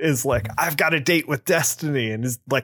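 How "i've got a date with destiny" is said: put-on crazed voice, higher. Retelling a plot scene, the guy escaping by helicopter: imitating a maniac. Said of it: "he's like a maniac".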